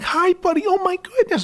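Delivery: very high, excited, eager voice. Showing how people talk to a dog: imitating high-pitched excited dog talk. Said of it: "When people talk in a high-pitched, excited way to a dog".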